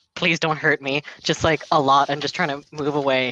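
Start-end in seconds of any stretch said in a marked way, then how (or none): 0.2-1.1 really quiet, very soft, hushed. A game narrator speaks as a character on the ground edging away, really quietly. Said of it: "he's saying just really quietly".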